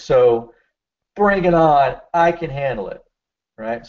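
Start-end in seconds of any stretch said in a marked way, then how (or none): 1.1-3.0 bring and I stressed, bring high and loud. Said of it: "emphasize those words".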